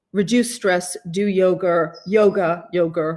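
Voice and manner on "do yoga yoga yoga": noticeable Boston accent. Speaker listing lifestyle advice, slipping into a boston accent. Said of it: "There's my Boston accent".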